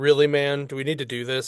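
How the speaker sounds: ordinary delivery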